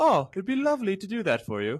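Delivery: put-on very high, sing-song English voice-assistant accent. Comparing car phone voices, imitating the English woman voice assistant. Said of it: "randomly switched to a female English woman".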